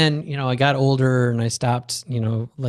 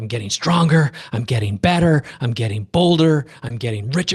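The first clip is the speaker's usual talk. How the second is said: mock pumped-up, energized tone. Retelling doing lunges at the gym, retelling psyching myself up. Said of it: "I'll try and psych myself up".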